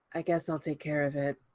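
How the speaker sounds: dry, level, flat, expressionless deadpan delivery. Looking at the others, the speaker volunteers in a deadpan voice. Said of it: "in a deadpan voice".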